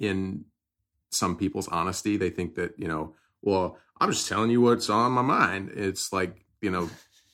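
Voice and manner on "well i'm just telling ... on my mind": put-on loud, commanding Southern general's accent. Quoting a kind of person during a conversation, in a southern general accent. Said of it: "was that your like Southern general accent?".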